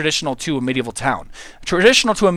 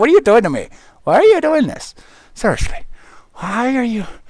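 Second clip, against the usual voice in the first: pitched-up talking cat voice; 7 semitones higher, 4 dB louder than usual. Holding the cat up for viewers, voicing Oscar the cat. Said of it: "He's like".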